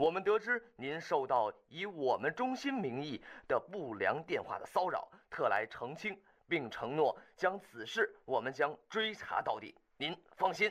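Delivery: plain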